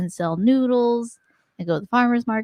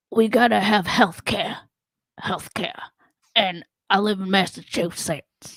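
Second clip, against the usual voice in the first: lower put-on politician voice slipping into country; 3 semitones lower than usual. Drawing a card that asks for an impression: Bernie Sanders impression. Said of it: "Do an impression of Bernie Sanders".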